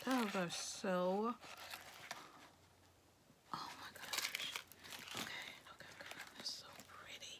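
hushed whispering. Talking to viewers while looking at something, whispering. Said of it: "Why am I whispering?".

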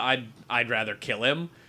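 ordinary talk, nothing marked

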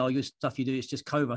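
ordinary delivery

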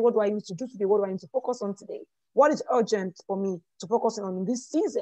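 ordinary talk, nothing marked

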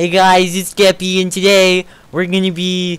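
put-on very high, loud, squealing baby voice. After dying in a game, the speaker launches into a baby Skeppy impression. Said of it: "Like the baby Skeppy impression".

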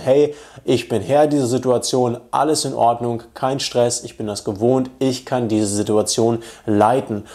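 ordinary delivery

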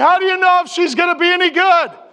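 mock, high-pitched, jeering, heckling yell. Retelling a hungover guy's question in class: imitating someone yelling. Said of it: "he yells out".

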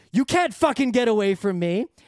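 normal talking voice

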